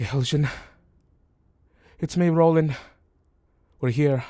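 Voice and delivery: frightened voice calling out. Narrating to a player, the speaker voices a message heard in their head: Roland's scared voice. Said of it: "You hear his scared voice".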